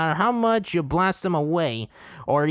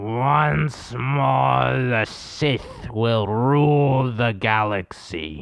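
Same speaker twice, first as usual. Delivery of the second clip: low, creepy villain voice, "once" dropped low, drawn out; 5 semitones lower than usual. Asked for his best impression, the speaker does a Darth Sidious impression. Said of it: "I did Darth Sidious".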